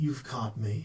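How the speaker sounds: smooth silky voice. Voicing a caught thief who is ready to barter: soft and silky voice. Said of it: "Soft and silky is how it's described".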